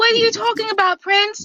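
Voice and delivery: mock offended complaining. Imitating someone complaining to Prince about being picked on: imitating someone offended. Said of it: "if I was a certain international bovine, I would have been up here like".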